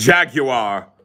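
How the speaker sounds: jaguar with British pronunciation. Saying a word when asked, joking about turning British: British accent. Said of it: "Are you gonna start saying jaguar now?".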